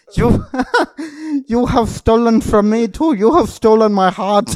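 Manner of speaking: put-on Indian accent. Riffing on a scam, speaking in a mock Indian accent. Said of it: "This is turning Indian".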